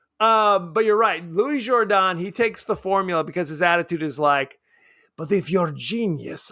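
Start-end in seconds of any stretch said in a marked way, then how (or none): 5.2-6.5 put-on some sort of loose, vague Eastern European accent. Imitating Louis Jourdan's attitude while taking the formula: Louis Jourdan impression, Eastern European accent. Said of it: "Eastern European of some sort".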